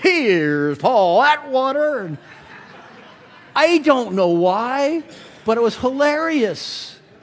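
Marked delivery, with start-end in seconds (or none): 0.0-2.0 TV show announcer-style host voice. Retelling someone calling out from the booth before the message, in Ed McMahon voice. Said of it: "in his Ed McMahon voice".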